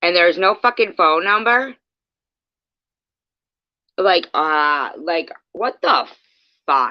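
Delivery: angry, fed-up, disbelieving outburst. Talking to S J, angry. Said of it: "I'm so fucking mad right now".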